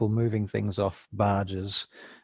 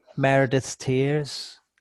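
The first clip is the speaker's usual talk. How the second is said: put-on high, small little boy voice; 5 semitones higher, 4 dB louder than usual. Voicing a little boy who approaches the group: little boy voice. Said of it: "this little boy comes up to the group".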